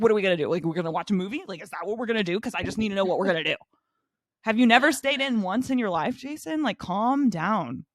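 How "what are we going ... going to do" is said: acted-out, aggressive, needling, badgering delivery. Retelling how a boyfriend pushed back on staying in: imitating someone attacking an idea. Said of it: "attacks her idea of staying in".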